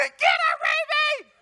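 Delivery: very high, shrill, loud screeching shout. Speaker recalling chasing Raby, imitating a high-pitched scream. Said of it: "has this high pitch that he just screams out".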